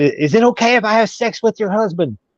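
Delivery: brazen, high-pitched yelling. Retelling a question yelled at the wife: imitating someone yelling. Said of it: "yelled it at her".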